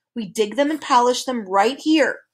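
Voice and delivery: ordinary delivery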